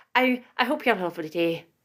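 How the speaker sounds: put-on Irish accent. Wrapping up and saying goodbye to listeners, the speaker switches to an irish accent. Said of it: "I'm going Irish".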